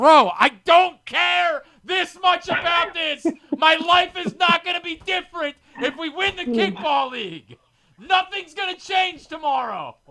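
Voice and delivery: furious screaming, very high and loud. Retelling screaming at a teammate in left field mid kickball game, retelling angry screaming. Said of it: "I'm like screaming at him".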